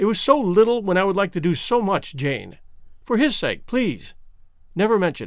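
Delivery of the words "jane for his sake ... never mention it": ordinary delivery, nothing marked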